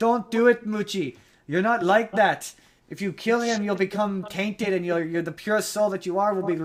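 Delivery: terrible put-on Irish accent, high-pitched and loud. Retelling a movie scene, the speaker voices the mob boss in a terrible irish accent. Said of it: "I'm doing a terrible Irish accent".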